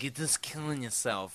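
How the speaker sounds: soft, hushed scolding under the breath. Retelling how Marlon Brando scolded someone about smoking: Marlon Brando impression. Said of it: "the best Marlon Brando impression ever".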